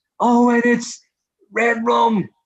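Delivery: very high, very slow, drawn-out race commentator voice. Explaining how he picks horses, imagining the race commentator: horse racing commentator voice. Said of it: "imagine the commentator saying".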